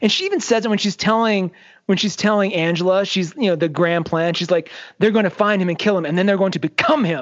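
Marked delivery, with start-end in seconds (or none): 5.0-7.2 imitated angry tone. Retelling what a character says while explaining her plan: imitating someone angry. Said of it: "she's angry about it".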